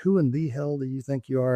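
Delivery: ordinary delivery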